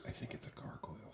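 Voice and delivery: very hushed, barely voiced whisper in character voice. Voicing a character warning another about a gargoyle: whispering in character. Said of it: "he whispers".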